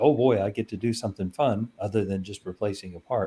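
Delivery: ordinary delivery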